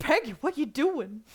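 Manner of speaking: Brooklyn gangster voice. Retelling a cartoon scene, first attempt at Hank Hill: too gangster. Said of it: "that's too gangster".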